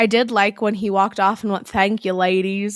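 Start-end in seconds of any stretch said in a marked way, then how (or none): 1.7-2.8 put-on Southern accent. Retelling a line someone said while walking off: imitating a southern accent. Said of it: "in a southern accent".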